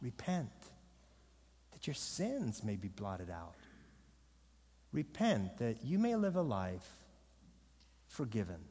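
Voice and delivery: gentle, soft, low, pleading wooing voice.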